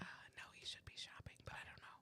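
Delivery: hushed whisper. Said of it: "Why are you whispering?".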